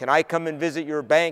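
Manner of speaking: plain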